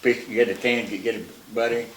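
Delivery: plain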